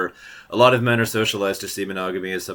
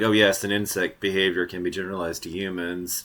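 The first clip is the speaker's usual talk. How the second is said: plain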